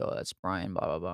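whispering. Retelling the one training him pointing someone out while passing: imitating a whisper. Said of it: "he kinda whispered to me".

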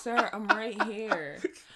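over-loud, slow, deliberate, drawn-out speaking. Retelling talking to someone who could not hear: imitating talking very loudly. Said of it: "Had to talk out loud as fuck".

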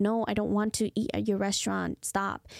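ordinary talk, nothing marked

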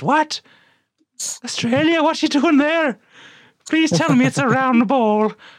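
very high put-on Irish woman voice. Imagining a footballer's mother answering a phone call: imitating an irish mother. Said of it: "they call the Irish mother and she says".

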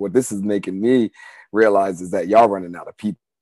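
ordinary talk

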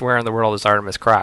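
ordinary delivery

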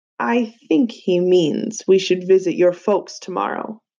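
ordinary delivery

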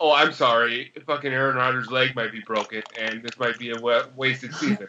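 ordinary delivery

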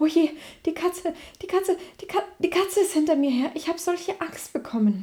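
out-of-breath, gasping, fast, high-pitched panting rush. A mother mouse rushes into the burrow, fleeing a cat, panting, breathless. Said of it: "keuchte sie".

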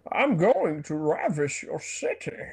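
hammy, swooping-pitch cartoon villain voice. After another speaker names the cartoon version, the speaker does a cartoon Bane voice. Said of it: "This would be like the cartoon version of Bane".

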